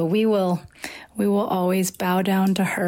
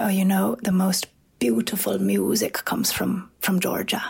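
put-on thick, gravelly Irish brogue. Quoting an old man's reply to them, thick gravelly Irish accent. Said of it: "in his thick, gravelly Irish accent".

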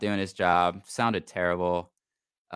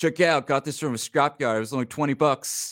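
put-on confident New York accent, man's voice; 6 semitones higher than usual. Telling a story about a guy showing off a scrapyard radio, imitating confident new york guy. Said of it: "just a very confident New York guy".

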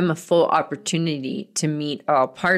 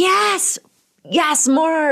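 play-acted, very high shrieking scream; 12 semitones higher, 4 dB louder than usual. Speaker retelling what they call out to women in Zoom client sessions, screaming. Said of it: "And I'm like screaming".

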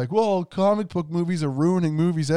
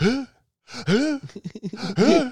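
very high, squeaky "huh" said again and again; 10 semitones higher than usual. Reenacting a movie scene of someone picking up a snowball: Will Ferrell impression. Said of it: "[name] is doing such a good impression of this".

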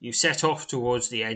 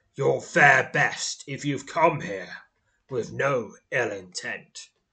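big rumbling voice of a giant; 4 dB louder than usual. Narrator voicing the foremost giant addressing newcomers in the hollow, deep, rumbling giant voice. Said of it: "his deep, rumbling voice".

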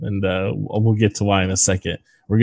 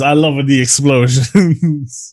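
attempted Israeli accent, higher and louder; 6 semitones higher, 4 dB louder than usual. Retelling a producer's delighted reaction: Menachem Golan impression. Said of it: "I can't do an Israeli accent".

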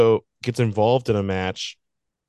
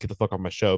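usual speaking voice

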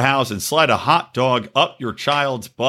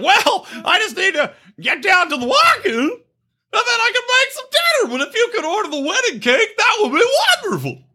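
very high-pitched, odd put-on talking voice. Imitating how the guy talks, like Gomer Pyle: Matthew Shea voice. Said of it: "He talks exactly like that".

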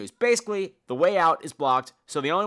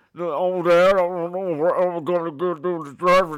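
put-on words drawn out in an Australian accent; 3 dB louder than usual. Imitating the lead actor from the film: Buffalo Bill voice with Australian accent. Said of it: "he had a voice like Buffalo Bill from Silence of the Lambs, but with an Australian accent".

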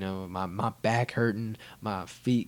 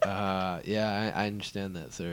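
ordinary talk, nothing marked

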